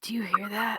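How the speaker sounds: whispered voice. A player's character whispers to another character from a hidden place, whispering. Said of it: "I'm gonna whisper to Delson".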